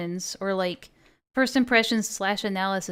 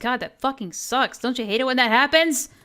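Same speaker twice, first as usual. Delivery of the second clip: heated, fired-up, worked-up rant; 3 semitones higher than usual. Streamer venting to chat about being misrepresented, yelling. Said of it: "I gotta stop yelling".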